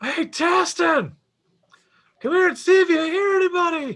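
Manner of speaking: very high-pitched calling shout. In character, deliberately shouting to draw attention, calling someone over. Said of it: "so I shout that".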